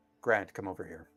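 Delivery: low, gentle but firm, unbending delivery. Retelling how a shorter man called the speaker over, in a soft but firm voice. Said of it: "in a very soft but very firm voice".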